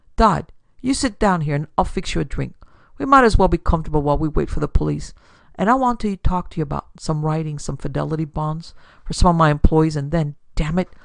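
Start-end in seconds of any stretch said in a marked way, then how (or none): none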